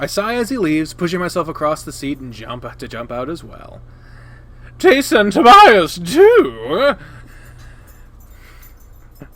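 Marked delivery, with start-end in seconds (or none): 4.8-6.9 high, loud, slow dumb voice. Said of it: "Such a dumb voice".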